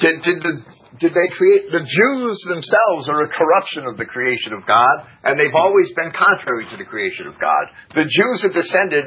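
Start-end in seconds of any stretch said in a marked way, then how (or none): none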